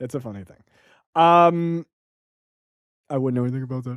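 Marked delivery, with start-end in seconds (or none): 3.1-4.0 put-on, fake deep voice. Joking about not knowing about celebrity: put-on deep voice. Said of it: "Was that your deep voice?".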